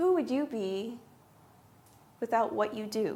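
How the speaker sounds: acted calm, soothing therapist-like counselor voice. Retelling the question the speaker's therapist asked: imitating a calm, soothing voice. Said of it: "in her calm, soothing voice".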